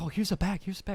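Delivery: mock thrilled, super excited, overeager tone. Retelling a haggling deal, quoting the seller: imitating someone super excited. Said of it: "super excited".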